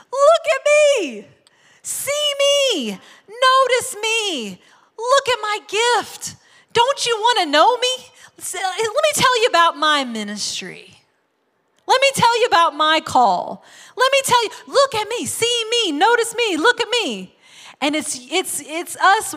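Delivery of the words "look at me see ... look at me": all-out, high-pitched shout at the top of lungs. Acting out people marching down Main Street demanding notice: shouting at the top of lungs. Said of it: "we're shouting at the top of our lungs".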